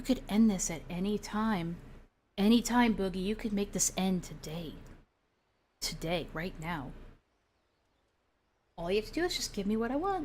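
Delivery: tempting, devilish, hushed half-whisper. Acting out someone half-whispering in another's ear: half-whispering like the devil. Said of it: "whispering like the devil in his ear".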